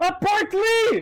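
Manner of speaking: desperate, panicked yell. Retelling a panicked moment while playing a horror game: imitating own desperate shout. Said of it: "eu desesperado, desesperado, falei".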